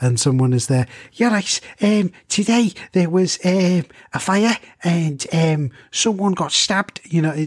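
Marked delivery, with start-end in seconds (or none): 1.1-7.0 put-on Liverpool Scouse accent, high and badly done. Demonstrating an accent for listeners, give a bad Scouse accent attempt. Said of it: "my attempt at a Scouse or Liverpool accent".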